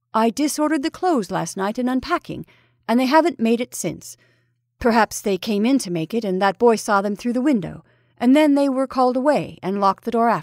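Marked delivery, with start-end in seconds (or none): none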